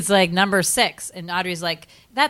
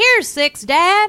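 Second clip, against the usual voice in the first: very high-pitched, loud, shrill cowboy voice; 13 semitones higher, 5 dB louder than usual. Telling a story, quoting Rusty speaking to his dad: imitating Rusty like a cowboy. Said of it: "does he talk like that?".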